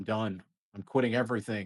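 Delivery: ordinary delivery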